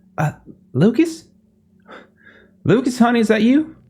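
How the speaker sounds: very high-pitched woman's voice. Voicing a woman answering a phone call in the game: woman's voice on the phone. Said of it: "a woman's voice, uh, answers".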